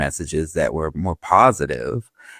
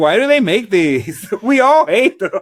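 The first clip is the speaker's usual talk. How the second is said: high, loud, laughing, griping tone. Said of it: "I was like".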